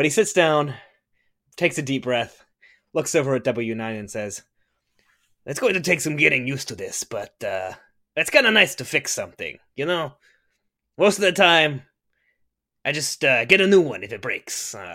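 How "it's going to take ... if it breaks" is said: casual, chatty, musing, reflective voice. At a game table, the former ship salesman sits down and talks to the droid: in character as ex-ship salesman. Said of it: "I used to sell ships, not fix them. / [name] will kind of turn around and toss the Hydrus banner he was holding onto some nearby surface. / Hey, you never need to ask that, and I'm not yet a captain".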